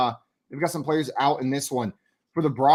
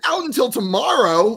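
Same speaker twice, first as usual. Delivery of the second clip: mock stunned blurt, very high and loud; 9 semitones higher, 6 dB louder than usual. Retelling being told they were out until tomorrow, replaying own pure shock out loud. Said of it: "like out loud with pure shock in my voice".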